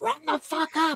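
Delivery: very high-pitched screaming shout. Retelling hearing Connor scream from behind: imitating Connor screaming. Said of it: "Connor screaming".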